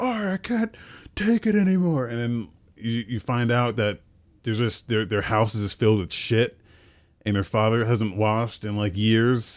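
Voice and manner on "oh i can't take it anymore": put-on shrill, very high, drawn-out wailing child's shout. Retelling a game side quest where a kid shouts: imitating a kid shouting. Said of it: "this kid was just, like, shouting".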